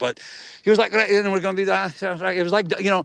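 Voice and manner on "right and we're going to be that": rough, clumsy put-on Scottish accent. Retelling a walk with a co-star, imitating a Scottish accent. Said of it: "he was doing a Scottish accent".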